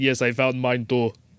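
put-on South American accent. Retelling a game character's reply while describing gameplay, Bane in a Brazilian accent. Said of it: "That's my Brazilian accent".

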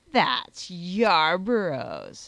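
low, sneering, scornful aside. His lordship repeats the other man's words back to him, sneering. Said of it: "sneered his lordship".

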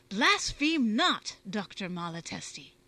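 very loud, slow, deliberate, stern shout. Bacon answers the Italian, Dr. Malatesti: crying out sternly. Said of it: "cried Bacon sternly".

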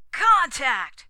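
roaring shout, very loud and high. A voice calls out once again, roaring. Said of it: "roared the voice again".

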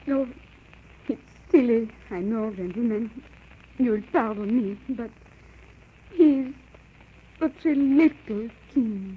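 tearful, weeping. Saying goodbye to the departing gentlemen, crying. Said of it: "But why are you crying?".

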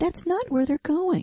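tiny little voice. Narrating to a player the voice he hears: tiny little voice. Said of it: "You hear this tiny little voice say".

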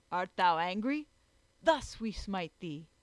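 loud called-out cry. Winfred swings his axe at the tree, crying out. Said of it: "cried Winfred".

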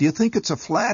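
very high, bird-like, helpless chirp. Narrator reading his mother after the car stalls, chirped helplessly. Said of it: "my mother chirped helplessly".

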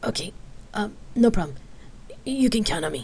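reassuring tone, but nervous and anxious. A brother answers his sister, who has just tried to calm him: nervous reassurance. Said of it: "He nervously reassured with a smile".

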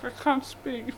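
muffled speech with mouth full of food. Race commentator eating a sausage sandwich on air: talking with mouth full. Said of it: "I'm chewing".

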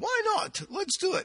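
very high-pitched, deliberately bad German accent. Telling a story, answer the chauffeur's offer in an Einstein voice with a bad German accent. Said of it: "I have no German accent whatsoever".

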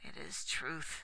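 groaning. Durnor answers, cursing his own scatterbrains, groaned. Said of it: "groaned Durnor".

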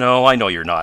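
spoken through laughter. A man teasing a young inventor answers him, laughing. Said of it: "laughed Mr. Damon".

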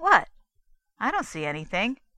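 loud, suspicious, doubting, with swooping pitch. Reading a man's reply after another man points down into a pit, suspicious. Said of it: "Douglas said suspiciously".

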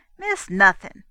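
sharp, snapping tone. A girl cuts off a man's protest, snapping back. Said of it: "snapped back the girl".

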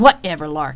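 curt snap. Rain storms to the counter and answers the pleading Lark, snapping. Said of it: "Rain snapped".

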